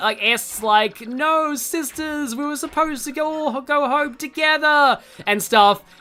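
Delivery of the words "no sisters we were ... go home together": screamed, high-pitched cry. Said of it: "screaming, like".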